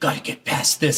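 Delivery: sneaky, hushed whisper under the breath. Describing sneaking past people in a stealth game, whispering to yourself. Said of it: "And I'm whispering like".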